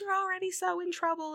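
acted-out, very high, shrill scolding yell. Retelling a story where a mom scolds her daughter: imitating a mom yelling. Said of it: "yelling at her".

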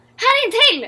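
very high, loud shouting yell. [name] calls out to Elisa while they search and find old bottles, shouting. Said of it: "Skrek [name]".

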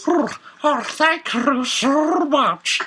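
very high, slow, drawn-out underwater eunuch voice. Voicing a creature who has just eaten bagels: underwater eunuch voice. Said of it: "If you can keep this up".

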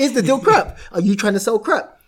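put-on pointed Nigerian-accented mother voice. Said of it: "that's a better Nigerian accent".

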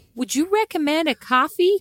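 put-on American accent. Trying out how americans talk, american accent. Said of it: "for that amazing American accent".

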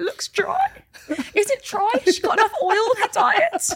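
extremely high, squeaky, fretting dog-whistle voice. Retelling what she said to him at 6 a.m. on a monday; very high-pitched voice. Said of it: "The voice goes so high, only dogs can hear me".

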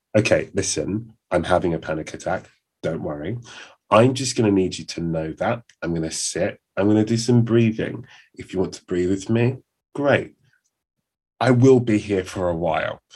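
put-on detached, matter-of-fact, businesslike clinical calm. Retelling telling a housemate about a panic attack, imitating own clinical manner.

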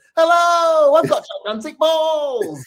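very high, slow, drawn-out teasing voice. Reading a parody T-shirt aloud: imitating the other speaker's voice. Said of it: "'cause I read it in your voice".

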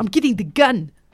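South African accent attempt. Retelling what a man said during a break-in: put-on South African accent. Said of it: "That was better".

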